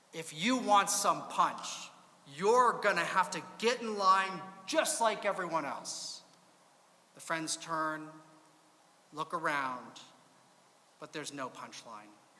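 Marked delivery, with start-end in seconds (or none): 0.1-6.2 stern, severe, no-nonsense voice. Telling a joke, the bartender answers two friends at the bar; stern voice. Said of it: "replies in a stern voice".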